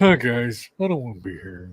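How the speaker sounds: put-on gloomy donkey voice. Greeting the others: Eeyore voice. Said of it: "I'm Eeyore".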